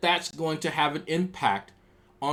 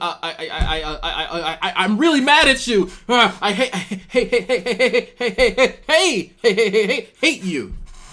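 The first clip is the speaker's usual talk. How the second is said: mock angry stutter, higher and louder; 6 semitones higher, 8 dB louder than usual. Mocking someone who stutters when angry: imitating an angry stutter. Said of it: "out of his vitriol when he has to stop the stutter".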